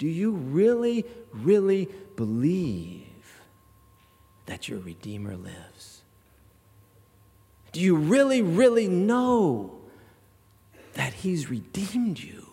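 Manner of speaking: put-on tearful, earnest voice. Retelling the conductor's words to the choir's diva, acting almost in tears. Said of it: "almost in tears".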